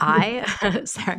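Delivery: words broken up by laughter. Answering the other speaker's point while laughing while talking. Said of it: "I'm just laughing".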